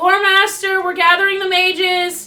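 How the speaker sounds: high-pitched, loud yelling. During the game, a player yells back to the lore master. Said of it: "Sorry for yelling".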